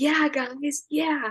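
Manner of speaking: sarcastic cheer. Retelling how a friend cheered the opponents on: imitating sarcastic cheering. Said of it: "he was like".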